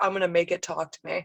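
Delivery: ordinary talk, nothing marked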